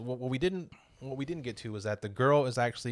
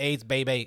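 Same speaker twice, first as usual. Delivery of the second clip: loud voice warped by a voice changer; 5 dB louder than usual. Retelling a movie scene where a character speaks through a voice changer: imitating a voice changer. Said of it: "gets the voice changer up".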